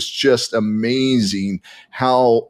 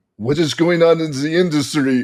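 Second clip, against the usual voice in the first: clumsy, bad, pitched-up fake French accent; 6 semitones higher than usual. Retelling what a guy said during their conversation, in a bad french accent. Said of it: "I'm doing a bad French accent there".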